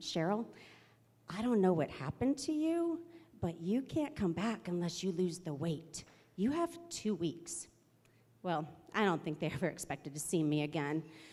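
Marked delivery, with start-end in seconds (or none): 0.0-7.7 mild, gentle, gentler voice. Quoting the Pacer leader who pulled her aside, imitating a gentler voice. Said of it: "says in a gentler voice".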